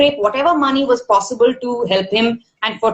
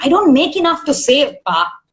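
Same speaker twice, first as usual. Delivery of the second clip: annoyed, fed-up, irritated tone; 3 semitones higher than usual. Retelling an answer to a father asking about savings: retelling own irritated reply. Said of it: "hear the irritation in my voice".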